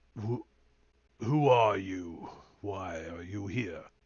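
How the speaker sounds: deep, low character voice. A storyteller voices a figure the players hear through the mist: deep voice. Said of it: "you hear a deep voice".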